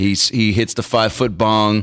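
normal talking voice

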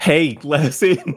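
very slow, high, stretched-out, drawn-out call. Answering what the character will yell at people watching from a building: yelling. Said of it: "what are you gonna yell at them?".

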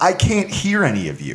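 plain

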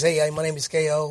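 slow Bronx accent, boxer character voice. Former entertainer shows how a character they played, a bronx boxer, talked: k.o. bronx boxer voice. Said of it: "we talk like this".

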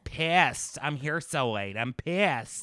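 put-on low, drawn-out Valley Girl drawl. Mocking a wrestler's mic promos: Nia Jax Valley Girl voice. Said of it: "does this Valley Girl thing".

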